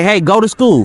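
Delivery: plain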